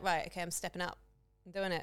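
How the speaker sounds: ordinary talk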